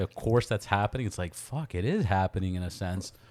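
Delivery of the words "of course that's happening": normal talking voice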